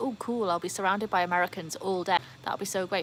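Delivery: ordinary talk, nothing marked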